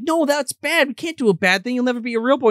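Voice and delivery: put-on high girl's scolding tone.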